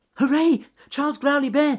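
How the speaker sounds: very high, loud squeak. Reading a story, Ernest Fluffy Rabbit answers the bear from his burrow, squeaky voice. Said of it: "squeaked Ernest Fluffy Rabbit".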